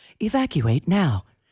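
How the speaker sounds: polite recorded-announcement woman's voice. Retelling a carbon monoxide alarm's warning: imitating the DMV voice lady. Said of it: "it sounded like the D M V voice lady".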